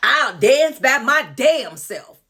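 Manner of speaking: put-on southern accent. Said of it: "let me get my southern".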